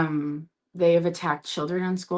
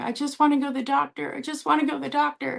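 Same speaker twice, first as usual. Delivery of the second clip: mock raw, ragged, high, rough screaming; 9 semitones higher than usual. Retelling a video of a woman dragged from her car: imitating someone screaming. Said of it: "she just is screaming".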